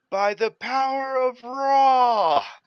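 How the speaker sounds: high, slow, booming yell.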